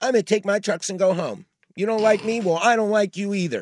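mock, high, loud screaming outburst. Describing a TV baseball analyst, imitating Alex screaming. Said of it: "Alex just screams like".

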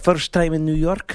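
put-on Eastern European accent. Retelling what a woman said to them, imitating eastern european accent. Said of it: "I had a Eastern European accent she had".

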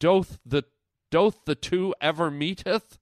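faux Shakespearean olde-English stage-speech style. Musing aloud, then slipping into: mock shakespearean speech. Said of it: "I don't know why I went Shakespearean there".

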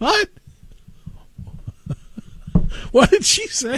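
words broken up by laughter throughout. Reacting to a recording just played back, laughing while talking. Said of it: "I'm sorry for laughing".

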